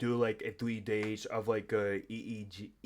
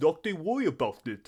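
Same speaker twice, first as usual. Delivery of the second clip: put-on Indian accent, pitched high; 6 semitones higher, 6 dB louder than usual. Voice impression of a doctor's catchphrase, in an imitated Indian accent. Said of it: "I would try and do like um the voice impression of like this Indian doctor".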